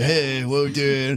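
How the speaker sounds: put-on teenage boy voice. Showing one of the new characters: stereotypical teenage boy voice. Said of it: "my stereotypical teenage boy".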